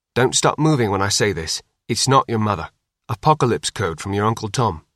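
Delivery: ordinary delivery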